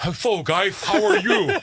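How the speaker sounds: cartoon duck voice with lisp.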